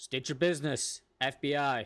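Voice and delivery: loud shout, called out. As people walk closer from a landed helicopter, a character yells out to them. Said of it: "I yell out".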